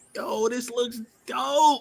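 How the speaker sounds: excited, high, slow hyped-up exclamation.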